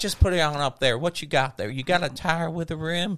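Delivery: friendly, sweet, sugary, honey-toned shop lady voice. Retelling a stop for a tire, the speaker imitates the woman who asked what he needed. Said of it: "She's like".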